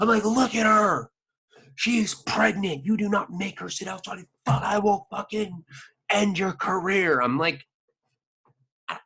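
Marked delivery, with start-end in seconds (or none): 0.2-7.2 play-acted raging, furious high-pitched screaming tirade. Retelling screaming at the manager while the restaurant stared: imitating himself screaming. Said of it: "I'm screaming to the point".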